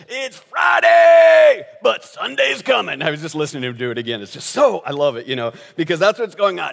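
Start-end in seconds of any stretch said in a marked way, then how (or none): 0.1-3.0 very high, drawn-out, slow, rasping preacher yell. Describing a preacher who yells his sermons, the speaker yells like Tony Evans. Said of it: "He just yells".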